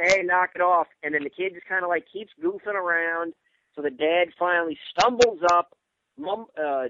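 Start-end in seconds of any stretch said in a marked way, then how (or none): 0.0-0.9 put-on drunk yelling. Telling an analogy about a drunk dad, imitating him yelling.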